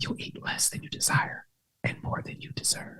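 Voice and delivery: very quiet, breathy, barely voiced whisper. Sharing a saying, whispered first, to repeat it regular afterwards: whispered. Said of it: "I'm gonna whisper it too".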